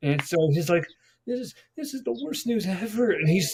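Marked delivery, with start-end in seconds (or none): 1.3-3.1 high-pitched, tearful, full-on sobbing delivery. Retelling a prank where Sal must cry on the phone: imitating someone crying. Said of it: "he's crying, like, legit".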